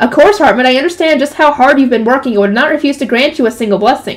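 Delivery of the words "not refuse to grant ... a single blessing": ordinary delivery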